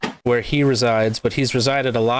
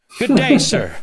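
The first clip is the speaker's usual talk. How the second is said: mock indignant fake outrage, higher pitch; 7 semitones higher, 4 dB louder than usual. Acting out an offended reply to being cut off: mock indignant. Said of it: "It's a how dare you".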